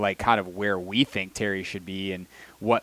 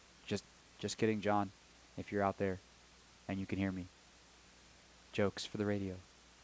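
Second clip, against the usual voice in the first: hushed, playful, joking stage whisper; 12 dB quieter than usual. Joking about a colleague on air, then apologizing: mock half-whisper. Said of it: "now you're whispering".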